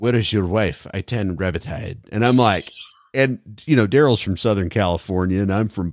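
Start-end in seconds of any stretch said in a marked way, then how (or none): 0.0-2.0 put-on Russian-accented English. Retelling what a woman asked the speaker and Daryl, Russian accent. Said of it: "in her Russian accent".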